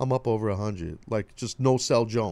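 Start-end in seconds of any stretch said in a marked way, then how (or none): 0.0-1.0 cocky, cool, dead calm, unexcited tone. Mimicking how someone just said they're up over 100, mock-cocky and calm. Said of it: "like cocky, like so calm".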